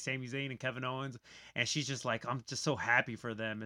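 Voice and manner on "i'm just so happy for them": put-on crying with happiness. Retelling how Becky Lynch reacted in a clip: imitating Becky Lynch crying happily. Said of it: "crying 'cause that's how happy she is".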